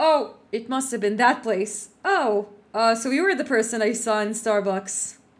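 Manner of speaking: put-on offhand, casual, nonchalant tone. Showing how to answer a player's tragic backstory as a GM: put-on nonchalant tone. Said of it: "I'm gonna say it in the same tone".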